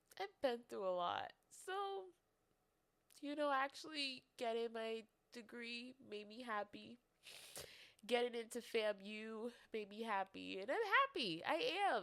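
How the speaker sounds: tearful, crying voice, speaking through tears. Podcast host talking about the last several years of adult life, crying. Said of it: "It sounds like I'm crying, which I am".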